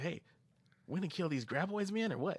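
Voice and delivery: carefree, overly goofy, very high-pitched voice. Imitating how a movie sidekick talks: goofy, carefree way of talking. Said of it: "way he talks, like, real goofy".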